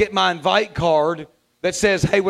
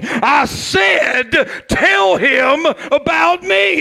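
mock, very slow, thundering, commanding divine yell; 9 semitones higher, 4 dB louder than usual. Retelling a spiritual experience, the speaker voices God's command: God yelling, retold. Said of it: "God yelling at you like he yelled at me".

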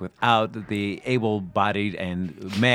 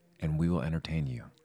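fake solemn delivery, lower and quieter; 5 semitones lower, 8 dB quieter than usual. Opening a podcast together as a joke: mock serious tone. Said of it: "we were so serious for a little bit".

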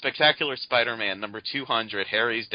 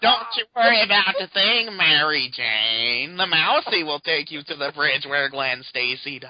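put-on nerdy voice, higher and louder; 5 semitones higher, 5 dB louder than usual. Asked by another speaker, doing Osborn as Urkel imitating Mousy. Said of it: "do Urkel Osborne imitating Mousy".

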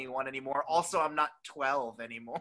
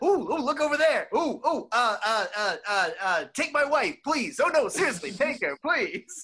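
loud, pitched-up, drawn-out, belted big and slow; 8 semitones higher, 5 dB louder than usual. Giving a taste of growing up with the father: Rob Bartlett impression. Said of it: "I have to do an impression of my father, Rob Bartlett".

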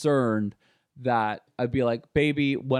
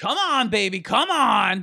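put-on slow, pitched-up, pushy old man voice; 8 semitones higher, 4 dB louder than usual. Quoting a man who hated excuses, imitating an old man's voice. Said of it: "He was just like".

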